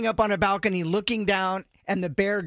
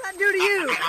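put-on scream, higher; 11 semitones higher than usual. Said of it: "You're screaming now".

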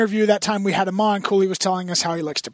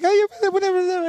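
very high, squeaky, lisping voice; 11 semitones higher than usual. Retelling a guest's impression of a coach: Harbaugh impression with a lisp. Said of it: "adds a lisp into his voice".

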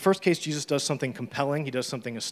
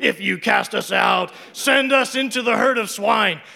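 very high, loud put-on demon voice; 10 semitones higher, 10 dB louder than usual. Reading the story aloud and voicing the begging demons: demon voice. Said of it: "That's my demon voice".

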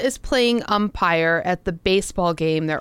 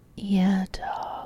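fake seductive voice, quieter; 7 dB quieter than usual. Joking with the other speaker in a put-on sexy voice. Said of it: "Try again".

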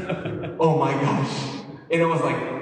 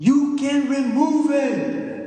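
mock very high, stretched-out, drawn-out scream; 10 semitones higher, 3 dB louder than usual. Retelling what a man in the room did: imitating someone screaming. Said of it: "he's screaming".

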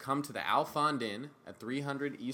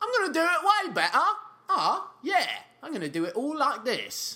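very loud, high, swooping delivery, words blurred together; 13 semitones higher, 8 dB louder than usual. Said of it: "Just sort of like Russell Brand".

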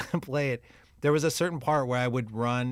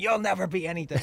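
put-on yelling cab dispatcher voice, higher pitch; 5 semitones higher than usual. Imitating a character yelling at the drivers: Danny DeVito in Taxi yelling. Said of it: "It's like Danny DeVito in Taxi".

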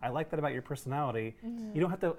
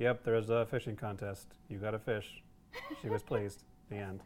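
acted, very low, flat monotone sarcastic drone; 7 semitones lower, 4 dB quieter than usual. A panelist praising a character, imitating her monotone sarcasm. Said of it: "I also like her monotone".

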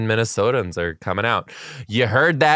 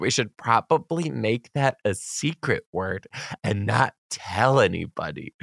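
soft, hushed, secretive stage whisper; 6 dB quieter than usual. Reading out a letter, quoting a child's secret answer: imitating a half-whisper. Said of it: "we whispered".

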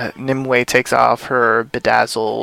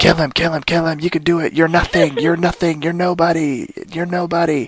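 yelling, higher; 5 semitones higher than usual. Retelling a TV scene where Nimue yells at Emma: imitating Nimue yelling.

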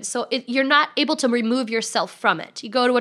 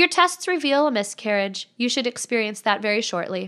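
ordinary talk

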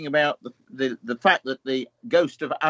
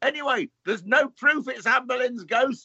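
shrill, very high-pitched shout; 10 semitones higher than usual. Recalling a voice shouting after them as they ran away, retelling a shout. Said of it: "this voice shouts".

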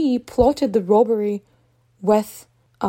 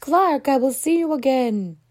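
loud calling out; 3 semitones higher than usual. Retelling how a hostage, wheeled away on a stretcher, shouts: imitating someone shouting. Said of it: "she shouts".

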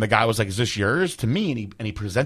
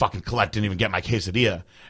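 put-on angry, complaining voice; 2 semitones lower, 4 dB quieter than usual. Retelling how Dave complained from the other room: imitating Dave complaining, mad. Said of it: "complaining from the other room, like, mad".

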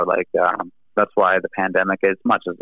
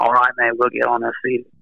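put-on voiced with Australian accent; 4 semitones higher than usual. Imagining the label staff's reply to a request for CDs; Australian accent. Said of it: "they'll Australian accent".

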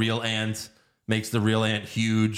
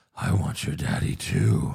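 put-on menacing voice, lower pitch; 4 semitones lower than usual. Retelling a kidnapper's line to a child: imitating a menacing line. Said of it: "Very menacing".

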